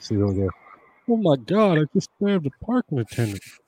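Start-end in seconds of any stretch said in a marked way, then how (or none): 1.1-3.4 swooping, pitched-up cartoon voice with wide pitch swings. Reading out memes about someone, in a Hank Hill voice. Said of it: "That's my best Hank Hill".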